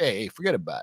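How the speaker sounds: Italian-American accent. Recommending a movie to watch in Italian, the speaker jokes in a stereotypical Italian-American accent. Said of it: "not that Italian".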